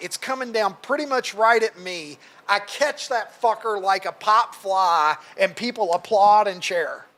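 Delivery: ordinary delivery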